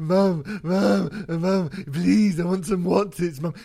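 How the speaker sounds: put-on high, loud, drawn-out whiny crying toddler begging. Explaining how to start an impersonation, doing a whiny crying toddler voice. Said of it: "That's basically how you get into an [name] impersonation".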